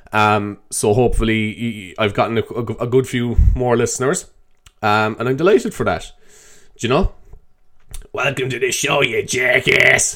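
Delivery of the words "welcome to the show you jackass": put-on American accent. Greeting listeners at the start of the show, in a put-on American accent. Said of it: "I was putting on one of those accents".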